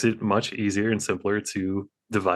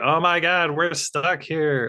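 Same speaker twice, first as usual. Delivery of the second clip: stilted, high, badly acted yell; 8 semitones higher than usual. Retelling the scene where Robin is stuck to a buoy: imitating Burt Ward's Robin yelling. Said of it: "He just yells".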